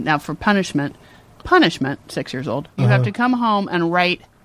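ordinary talk

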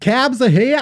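rough imitated New Jersey accent. Quoting the one line remembered from Jersey Shore, in an attempted New Jersey accent. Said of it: "I don't know how to do a New Jersey accent".

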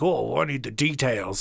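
irritated, angry, pressing dad voice. Imagining a dad asking for details of the robbery: imitating an angry dad. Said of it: "It's just my angry dad".

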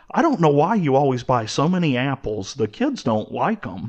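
usual speaking voice

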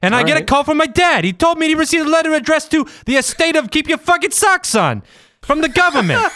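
loud, heavy Boston accent, pitched way up. Telling a story about a call from his dad, Boston accent getting louder. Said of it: "Kyle's Boston accent goes up about 5 decibels".

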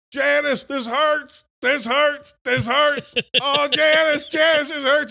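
acted scream, very high-pitched, shrill and loud. Retelling a story, a man slides through a seat crying to Janice; retelling a scream. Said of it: "he's screaming".

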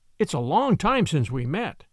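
usual speaking voice

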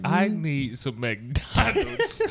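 usual speaking voice

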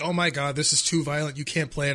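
ordinary delivery

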